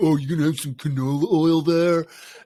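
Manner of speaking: judgmental bro voice. Imitating the other speaker scolding a shopper about canola oil: imitating Crosby as a judgy bro. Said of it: "me impersonating you, telling Lugavere".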